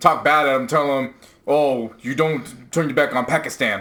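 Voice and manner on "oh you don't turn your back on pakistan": belittling, demeaning fake British accent. Retelling how she demeaned a family on a live stream: imitating a fake british accent. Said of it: "uses this fake accent".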